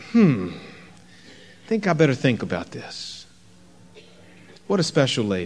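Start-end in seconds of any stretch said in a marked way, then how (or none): 0.1-3.3 soft, quiet, reflective, thoughtful murmur. Retelling a woman's reply instead of an excited outburst, quiet. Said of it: "She's very quiet and just said".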